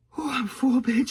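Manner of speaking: high-pitched, groaning, whiny voice.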